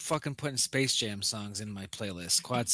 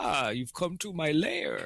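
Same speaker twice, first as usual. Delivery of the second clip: swooping put-on vampire villain voice; 4 semitones higher than usual. Recalling voicing a D&D campaign's vampire villain, vampire voice turning Rastafarian. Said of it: "I did my vampire voice. Like".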